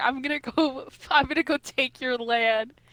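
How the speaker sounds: put-on possessive rage. Retelling a story character's threat to an enemy: imitating possessive rage. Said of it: "He literally went into, like, full possessive mode".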